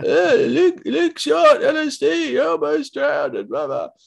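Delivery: put-on mumbled, thick Welsh accent, very high and swooping. Speaker retells what a man said to them out in the surf, strong mumbled welsh accent. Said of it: "he's got the strongest Welsh accent".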